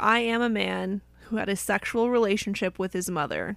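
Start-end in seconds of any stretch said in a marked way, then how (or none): none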